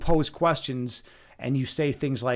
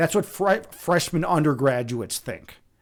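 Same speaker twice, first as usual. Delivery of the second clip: ordinary delivery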